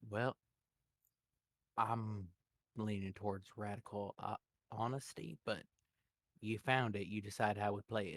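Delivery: very quiet, deep voice. Narrating a story, voicing a man's reply in a much lower voice. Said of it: "in a much lower voice".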